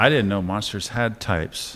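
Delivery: ordinary talk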